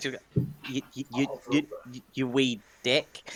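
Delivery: hesitant, uncomfortable stammer. Showing how a very polite man calls someone a name, hesitant, uncomfortable stammer. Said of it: "look really uncomfortable with calling someone a wee dick".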